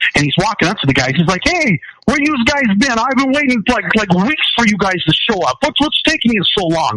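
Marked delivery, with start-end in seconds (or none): 1.4-7.0 put-on high-pitched, full-on New York accent. Retelling what a captured soldier said to American troops: full-on New York accent. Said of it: "he was full-on New York accent".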